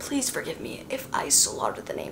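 quiet, whispered voice.

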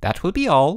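genial, pleasant voice. Mr. Sturgeon, ending his meeting with Bruno and Boots, speaks pleasantly. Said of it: "concluded Mr. Sturgeon pleasantly".

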